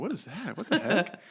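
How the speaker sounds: high, laughing, baffled tone.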